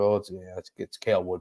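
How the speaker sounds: mock under-breath mutter. Retelling how Nico answered who the fastest player is: imitating Nico muttering under his breath. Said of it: "he kind of under his breath was like".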